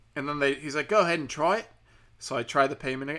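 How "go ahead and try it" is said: imitated Australian accent. Retelling a call with a fraud department agent: put-on Australian accent. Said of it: "Is that Australian I'm doing?".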